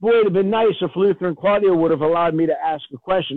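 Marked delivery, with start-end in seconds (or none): none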